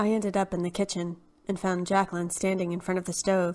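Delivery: ordinary delivery, nothing marked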